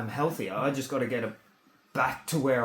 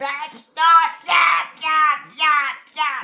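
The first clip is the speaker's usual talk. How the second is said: put-on scream, higher and louder; 11 dB louder than usual. Retelling how Shona would scream and yell: imitating Shona screaming. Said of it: "after Shona would scream and yell".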